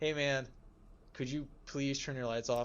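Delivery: acted-out polite, friendly, nice tone. Retelling asking a man to turn his car lights off, retelling a polite request. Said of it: "I made that my tone sound much nicer there".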